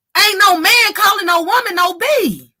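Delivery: forceful high declaration.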